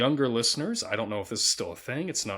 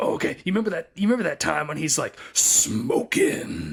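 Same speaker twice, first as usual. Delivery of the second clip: imitated gravelly voice, pitched higher; 6 semitones higher, 4 dB louder than usual. Recalling a man who kept asking about The Mask, imitating a gravelly voice. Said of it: "he had this gravelly voice".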